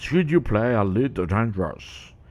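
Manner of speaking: put-on a slight touch of British accent. Acting out Obsidian coming on in the videos about a game, with Obsidian's little British accent. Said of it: "with a little British accent".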